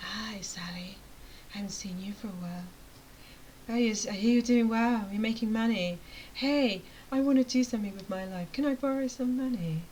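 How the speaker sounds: weird, slithery, put-on snake voice. Imitating long-unseen acquaintances who reappear once you earn money, slithering snake voice. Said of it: "like a slithering snake".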